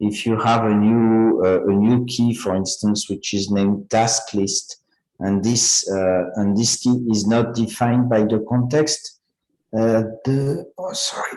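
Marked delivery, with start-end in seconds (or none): 10.8-11.4 voice giving out to a soft whisper. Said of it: "I'm losing my voice".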